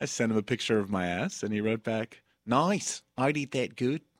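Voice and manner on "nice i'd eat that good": put-on dropping into an Australian accent. Reading back a text reply from Jason Ellis; Jason Ellis Australian accent. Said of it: "That was a really good accent".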